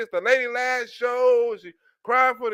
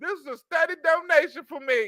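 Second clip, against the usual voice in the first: mock crying, higher pitched; 4 semitones higher than usual. Mocking a woman who is losing her show's paycheck, imitating someone crying. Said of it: "she's crying because she's losing the paycheck".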